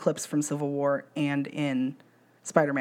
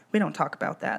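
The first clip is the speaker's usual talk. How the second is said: ordinary talk, nothing marked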